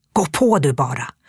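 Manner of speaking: words hissed, spoken through a hiss. A narrator reads a woman shoving a man from behind, hissing. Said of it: "väser hon".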